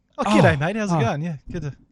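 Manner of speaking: normal talking voice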